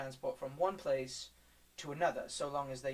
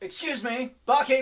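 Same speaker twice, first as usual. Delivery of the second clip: booming, very loud, very high yell; 11 semitones higher, 14 dB louder than usual. Voicing a character calling out to the barkeep: yelling for the barkeep. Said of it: "as he yells".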